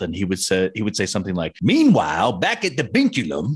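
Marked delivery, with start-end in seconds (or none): 1.6-3.6 put-on old Southern man's accent. Quoting someone's funny character bit: old Southern man voice. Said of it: "putting on this voice of a 70-year-old man from the South".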